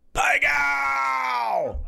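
very high, rough, raspy scream, "gow" drawn out. Retelling what they yelled at a card table: imitating own screaming. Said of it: "So I am screaming".

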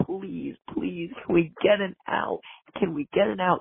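slow, pleading screaming. Red Sox fan recalling a frustrating inning, retelling screaming at the TV. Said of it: "I was screaming at my TV".

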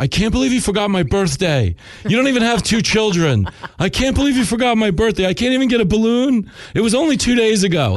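play-acted very high, shrill screaming fit. Speaker describes Lincoln causing scenes at the store: imitating Lincoln screaming. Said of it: "he'll just start screaming".

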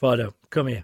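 loud, cross, displeased, upset-sounding voice. Speaker demonstrating how many men call their dog, sounding a bit upset. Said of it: "if you stand there and go, as many men do".

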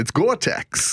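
put-on New York accent. Showing how George says Gore-Tex, in George's New York accent. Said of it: "He's got that New York accent".

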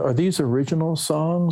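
high-pitched, wondering tone. Speaker recounts a man asking about a cassette they gave him, slow Truman Capote impression. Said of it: "he spoke very slowly in a, in a very like almost Truman Capote kind of way".

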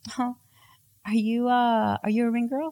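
put-on sugary, sweet, high little voice. Retelling a woman speaking to her in the bathroom, imitating a sweet voice. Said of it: "like in this like sweet voice".

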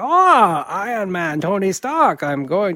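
drawn-out scheming villain voice. Imitating the stereotypical scheming comic villain: imitating the Mandarin's stereotypical comic voice. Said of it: "that voice you just did".

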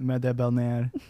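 put-on French accent. Saying a phrase again after being asked to: put-on French accent. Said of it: "Can you do it in your French accent?".

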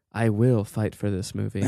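quiet, hushed aside. Retelling what she said to no one at all: said quietly to no one. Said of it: "she just quietly goes to no one at all".

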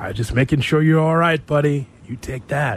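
close, caring, tender, intimate bedroom voice. Revealing a little-known side of Cap, doing Cap's soft bedroom voice. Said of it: "Soft. Right in the ear".

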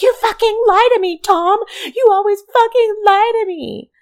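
mock screaming, very high, shrill and loud. Speaker retells a woman in an alley, retelling her scream at a man. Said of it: "She's screaming at him".

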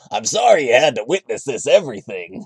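cartoon voice with swooping, swinging pitch. Re-saying his apology as he sounded in the Mario Brothers 3 cartoon: Mario cartoon voice. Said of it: "what if he sounded like he did in the Mario Brothers 3 cartoon".

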